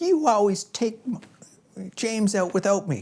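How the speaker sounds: put-on very high, loud, drawn-out five-year-old voice. Retelling what a five-year-old daughter says about being left behind: imitating five-year-old daughter's tone. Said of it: "In exactly that tone of voice".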